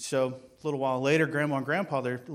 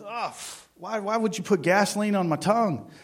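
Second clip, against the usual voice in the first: acted-out outraged screaming outburst, shrill and loud; 7 semitones higher, 5 dB louder than usual. Telling a joke, voicing the doctor after the drops, retelling a scream. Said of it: "the doctor screams".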